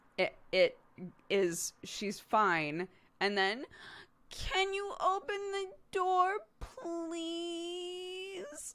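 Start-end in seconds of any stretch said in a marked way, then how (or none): 4.3-8.7 put-on very high, whingey, whiny toddler voice. A parent retells how their child asks to open the door, mimicking child's odd way of asking. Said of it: "Why are you saying it like that?".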